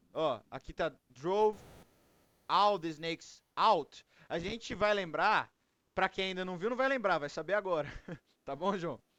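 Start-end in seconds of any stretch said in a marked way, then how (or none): 0.1-4.0 slow, deliberate "drove all the snakes out", word by word. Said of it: "apesar de tá separado aqui".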